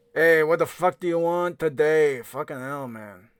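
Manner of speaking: put-on loud Brooklyn accent. Asked what Jerry sounds like, the speaker answers in Jerry's Brooklyn accent. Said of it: "He sounds like he's from Brooklyn".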